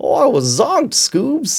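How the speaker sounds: very high, swooping, drawled cartoon voice. Showing that anything sounds okay when said in a Shaggy voice. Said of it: "if you say anything in a Shaggy voice, it becomes okay".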